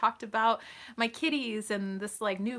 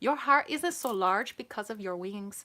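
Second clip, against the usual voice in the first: put-on British accent. Performing a quote after saying 'here we go', in a put-on accent. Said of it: "Staying with my friend Rosa".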